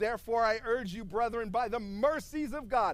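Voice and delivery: normal talking voice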